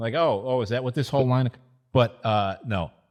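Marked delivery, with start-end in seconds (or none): 0.1-1.5 put-on startled, stammering "oh-oh" surprise. Imitating the old guy in the fair booth: imitating someone acting surprised. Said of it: "And he acts surprised".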